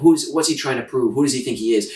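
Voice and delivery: normal talking voice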